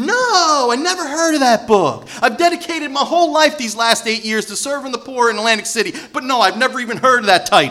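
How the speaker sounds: high, loud, mock-innocent, dripping with sarcasm. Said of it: "I'm like".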